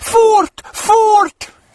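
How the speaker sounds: shrill, alarmed, very high, loud shriek. As their light goes out and something hisses, Moomintroll's mother: screamed. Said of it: "Skrek mumintrollets mamma".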